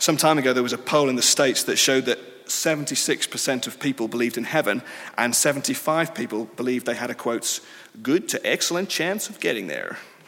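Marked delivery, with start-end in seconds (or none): 8.0-10.0 put-on American accent with swooping pitch. Quoting a poll from the States during a talk: put-on American accent. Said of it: "I didn't mean to do the accent".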